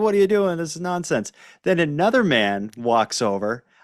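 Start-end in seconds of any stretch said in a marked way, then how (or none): 0.0-1.3 put-on, fast, high-pitched scolding yell. Retelling how a man yelled at a kid, imitating someone yelling. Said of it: "kind of just yells at the kid".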